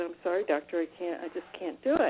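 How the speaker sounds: plain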